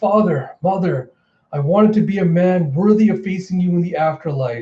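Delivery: acted-out bawling, crying, sobbing lament. Retelling a comic scene, voicing a character: imitating Momo bawling. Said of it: "Momo just bawling his eyes out".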